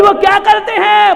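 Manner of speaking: high, loud, exasperated shout.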